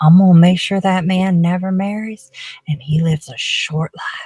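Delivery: muttered, private aside under the breath. Voicing a character cursing a man in a game: whispering under her breath. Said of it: "Basil's just gonna whisper under her, her breath".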